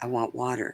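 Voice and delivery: soft, hushed half-whisper under the breath. Retelling asking a parent for water after surgery: imitating own half-whisper. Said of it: "And I whispered to him".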